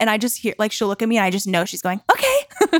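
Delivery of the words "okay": high-pitched dog voice. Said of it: "a banana voice".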